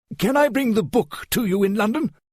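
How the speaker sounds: plain reading voice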